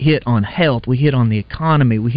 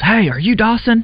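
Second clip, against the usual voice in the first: very high-pitched loud yelling; 10 semitones higher than usual. Retelling how a man yelled a question at them during a container delivery, retelling a yell. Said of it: "he yells".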